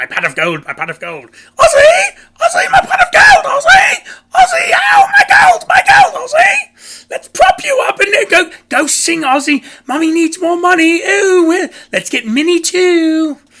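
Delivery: shrill, very loud, high, drawn-out evil shriek. Mocking Sharon over money, comparing her to a movie villain: evil Leprechaun voice. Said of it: "like that evil leprechaun".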